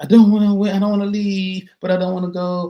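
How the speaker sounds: acted high, loud, nagging, wheedling whine. Recalling not wanting to leave the Star Wars visit, imitating Gene's whining. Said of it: "that was my my Gene whining voice".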